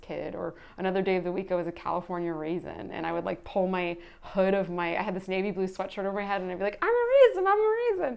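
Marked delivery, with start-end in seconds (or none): 6.8-8.2 high squeaky voice, stretched-out "a". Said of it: "which is my impression of a raisin".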